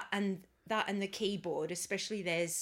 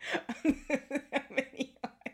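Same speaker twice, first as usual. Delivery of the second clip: laughing fit while speaking, higher; 7 semitones higher than usual. Joking about a repeated lyric: laughing fit while talking. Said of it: "I'm having a laughing fit".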